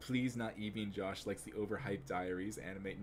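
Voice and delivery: ordinary delivery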